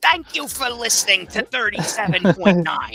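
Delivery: shrill, very loud, blaring radio DJ voice. Describing someone's old radio voice, a speaker does a Gilbert Gottfried impression. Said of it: "His radio voice was Gilbert Godfrey".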